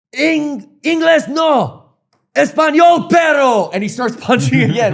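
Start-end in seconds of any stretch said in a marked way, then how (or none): 0.1-3.7 put-on very slow, drawn-out, high-pitched scolding yell. Retelling how a wrestler in the ring yelled at a fan: imitating Super Crazy yelling. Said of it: "I got yelled at for speaking English".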